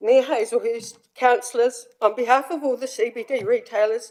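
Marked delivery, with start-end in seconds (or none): none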